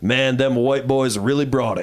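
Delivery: ordinary delivery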